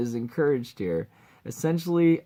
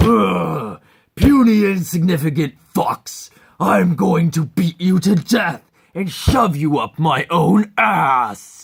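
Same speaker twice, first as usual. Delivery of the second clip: big burly orc voice, very loud yelling, pitched up; 5 semitones higher, 10 dB louder than usual. Voicing the arena champion orc threatening the fox, big burly orc voice, yelling. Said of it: "Typical big burly orc voice. Yells a lot".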